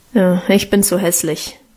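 ordinary delivery, nothing marked

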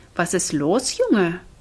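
usual speaking voice

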